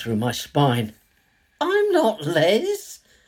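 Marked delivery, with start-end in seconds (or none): 1.6-3.0 very high, timid, cautious squeaky bleat. Reading a scene where the narrator denies being Les: cautious squeaky bleat. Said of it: "I cautiously bleat".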